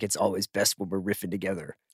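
voice like a cartoon superhero. Imitating how the other speaker's text messages read: Lego Batman voice. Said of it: "You read my texts like Will Arnett doing Lego Batman?".

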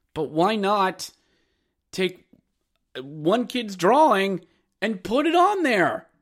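intensity ramping up as it goes. Speaking to hockey parents about a kid's jersey design: yelling. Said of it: "I'm yelling".

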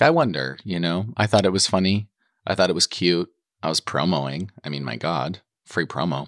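ordinary talk, nothing marked

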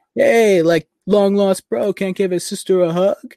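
put-on Long Island New York accent. Recounting how Pietro talked: imitating Pietro's New York accent. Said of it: "he was talking like that, like, Long Island, New York City".

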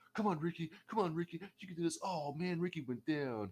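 put-on high, childlike commentator voice. Speaker mocks a commentator's play-by-play of Ricky's match: Taz impression, like a kid. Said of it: "You sound like a little kid".

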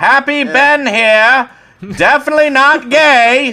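very high, very loud 1930s newsreel announcer voice. Recreating how someone sounded doing a bit in his comments, 1930s news reporter voice. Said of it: "sounded like some fucking 1930s like news reporter".

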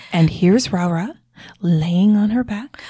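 hushed, slow golf commentator play-by-play voice. Retelling a friend's whispered golf-style play-by-play: Blue's hushed golf announcer voice. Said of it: "she spoke very quietly".

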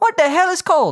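very high-pitched, ambiguous Spanish accent. Imagining someone from Mexico arriving in Canada: ambiguous Spanish accent. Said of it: "was that supposed to be a Spanish accent".

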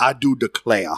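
mocking old-time Southern US accent, put on. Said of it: "You said it like you're a Southerner pre-Civil War".

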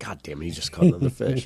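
put-on annoyed, angry grumble. Retelling own reaction to hearing another fish caught: retelling being annoyed. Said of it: "I was pissed".

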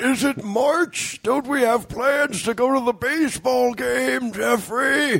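put-on elderly old man voice. Doing a running joke as a co-host's 73-year-old dad: old man voice. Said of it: "A joke that [name] does because my dad is 73".

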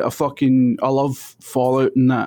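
ordinary delivery

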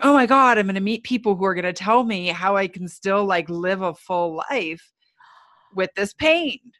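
put-on eager, excited, guns-blazing gushing enthusiasm. Speaker retelling walking into a pain support group, acting out their past excitement. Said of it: "excited, enthusiastic, going".

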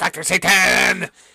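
announcer-style host delivery. Suggesting a clip of the host announcing the name: imitating Chris Hardwick. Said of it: "splice in where he goes".

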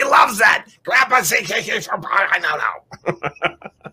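put-on high, shouting smoker grandma voice. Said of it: "pictured her to talk like".

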